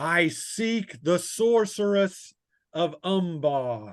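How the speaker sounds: high, booming, bellowing call, "Umbar" drawn out. Game master voices someone calling from outside, a bellowing call. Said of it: "a bellowing voice that calls".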